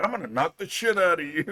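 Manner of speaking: put-on pissed-off tone. Retelling how friends reacted when grabbed: imitating a pissed-off friend. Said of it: "they were so fucking pissed off".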